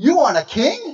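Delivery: very loud, high, astonished disbelief. Showing the right way to say a line: astonished question. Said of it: "you have to say it with astonishment".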